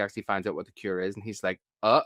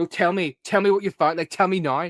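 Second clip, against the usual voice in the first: impatient, pushy, raised demanding voice; 8 semitones higher, 5 dB louder than usual. Imitating a character who gets impatient with her friends: imitating Buffy being impatient. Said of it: "Buffy gets really impatient".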